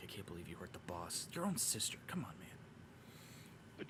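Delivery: barely whispered, very hushed, slow grumbling mutter. Voicing guards helping drag the bag, muttering under breath. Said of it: "Kind of like talking under their breath".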